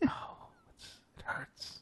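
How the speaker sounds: mock mumbling under breath. Imitating people who complain under their breath to start a conversation: imitating muttering under breath. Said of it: "talk under their breath".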